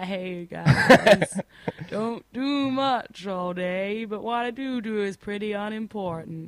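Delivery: slow, dragged-out, gloomy, mopey drawl. Imagining the guy who wrote the letter, the speaker gives him an Eeyore voice. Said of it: "it sounds a bit like Eeyore".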